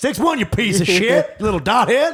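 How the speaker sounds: put-on high Southern accent. Quoting a boy who suddenly sounded like his grandpa, imitating a southern accent. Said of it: "you think people in Wisconsin talk like they're from Alabama".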